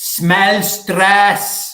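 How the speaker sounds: put-on loud, high-pitched Spanish accent, called out. Retelling a woman at a hotel in Spain calling out names, in a Spanish accent. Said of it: "and the woman in a Spanish accent, she goes".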